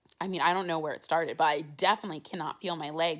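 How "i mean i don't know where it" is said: plain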